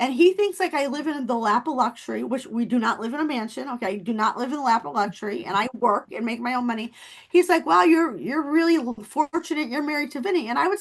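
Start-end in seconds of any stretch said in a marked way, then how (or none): 7.6-10.5 mocking sarcastic tone, higher. Recounting the sarcastic comments a man made to the speaker, imitating his sarcastic remark. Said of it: "he used to make like sarcastic comments".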